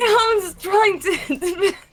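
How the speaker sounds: talking through laughter. Trying to explain something to the other speaker: laughing while talking. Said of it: "I'm laughing too much".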